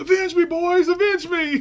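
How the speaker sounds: high, loud yell. Retelling a scene where a character starts yelling: imitating someone yelling. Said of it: "he starts yelling".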